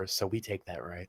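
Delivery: very quiet, half-whispered aside. Speaking quietly into another character's ear: half-whisper. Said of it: "I'm gonna whisper".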